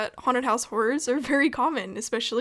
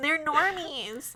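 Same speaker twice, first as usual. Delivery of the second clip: put-on more nasal voice, higher pitch; 4 semitones higher, 3 dB quieter than usual. Saying the line the other speaker refused to say again: put-on more nasally voice. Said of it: "say it in a more nasally voice".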